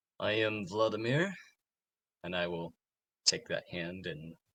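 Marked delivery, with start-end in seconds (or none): 0.2-1.3 slightly tipsy, slurred, words running together. Introducing himself in character after a little alcohol: slightly slurred drunk speech. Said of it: "a little bit of word slurring in there".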